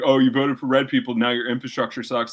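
ordinary talk, nothing marked

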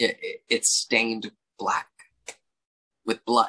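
choking up, voice catching with emotion. A speaker recounting a story that breaks their heart, choking up. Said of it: "I'm choking up".

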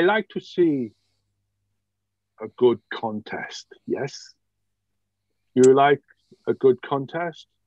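outrageously over-the-top, very poor fake French accent. Game master voicing a non-player character, in a very poor French accent. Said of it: "Yeah, and I do apologise for my very poor French accent as well. ... Yeah, and I do apologise for my very poor French accent as well. So, it is outrageously French. It is fantastic. I love French. It was Bretonian. Yeah, it's exactly. It's not a bad French accent. It's a solid Bretonian".

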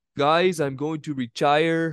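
put-on Brazilian accent in English, spoken slowly. Playing out a hypothetical where a light heavyweight wins and then speaks, in a Glover impersonation. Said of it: "that was not a bad Glover impersonation".

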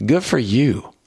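put-on sarcastic, snarky little remark. Retelling what a preacher's grandson said to him: imitating a snarky remark. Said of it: "it was, like, snarky".

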